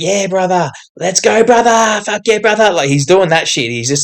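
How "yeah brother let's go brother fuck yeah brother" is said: high, hyped-up voice, lifted up. Retelling how a fighter tries to rile up his opponent: imitating Dan Hooker hyping someone up. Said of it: "Every time Hooker's interacting with him, he's like".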